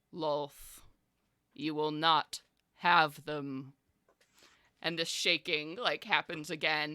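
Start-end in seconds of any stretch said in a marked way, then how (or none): 0.2-3.8 echoing divine voice seeming to come from everywhere. Narrating a scene, voicing an unseen speaker echoing around the chamber, booming. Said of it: "you hear this booming voice echo".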